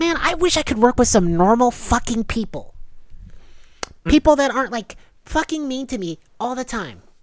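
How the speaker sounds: very high, shrill, loud, furious rant. Retelling a ticket worker complaining: imitating someone going off. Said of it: "she just starts, like, going off".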